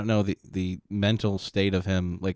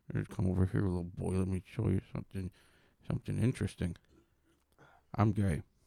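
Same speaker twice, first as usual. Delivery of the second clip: put-on drunk man voice, quieter; 7 dB quieter than usual. Acting out a scene, doing a drunk Kevin Spacey impression. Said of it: "a good drunk Kevin Spacey".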